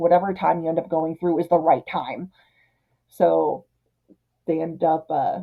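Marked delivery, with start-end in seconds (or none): 0.0-2.3 put-on skeleton voice, exasperated, annoyed and irritated. Retelling a film scene, imitating an annoyed skeleton. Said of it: "the skeleton's all annoyed".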